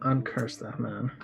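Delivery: quiet mutter under the breath. Speaking in character to another character: said under his breath. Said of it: "He says under his breath".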